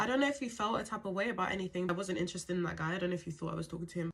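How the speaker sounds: ordinary delivery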